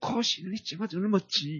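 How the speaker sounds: high-pitched, scolding, stern teacher-like voice.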